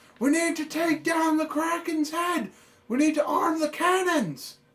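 ship captain yelling. Narrator voicing the captain calling out to the players during the kraken attack, ship captain yelling. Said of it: "the captain yells out to you guys".

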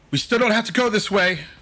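high yell in a put-on character voice. Yelling to the party in character during a fight: yelling in character. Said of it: "I just kinda yell".

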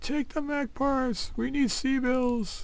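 high, slow, mild mock yell. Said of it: "everybody's probably screaming at this moment".

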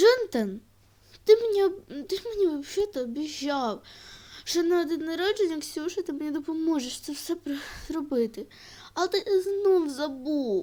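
high, rushed, reproachful tone through tears. In a skit, a woman reproaches a man who forgot his promise, crying. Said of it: "не плач".

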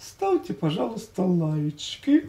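tender, hushed, soft, breathy and gentle. Asking viewers to leave likes on the video, as a gentle request. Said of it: "скажу более нежно".

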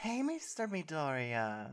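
sweet, high, sing-song welcoming tone. Narrator reading the listener's greeting on opening the door: said sweetly. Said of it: "you said sweetly".

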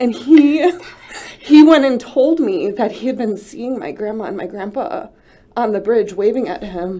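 crying through the words. Telling a personal story: crying while speaking. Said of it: "I didn't mean to cry today".

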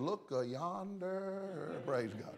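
soft, very slow Southern drawl, "yonder" stretched. Retelling a woman's old story about her daddy on the porch, in an old southern drawl. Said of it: "with her old southern drawl".

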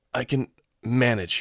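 strained, teeth-gritted voice. Reading a character refusing help while pushing a cart: straining through her teeth. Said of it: "Her voice sounded like she was straining it through her teeth".

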